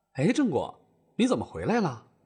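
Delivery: ordinary delivery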